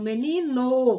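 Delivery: "menino" with the last syllable "no" punched.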